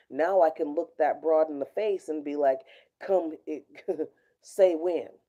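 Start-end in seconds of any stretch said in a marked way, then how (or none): 3.0-5.0 put-on Old West frontier gunslinger voice. Imagine facing down a narcissistic sociopath and answer in your Doc Holliday voice. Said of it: "in my Doc Holiday voice".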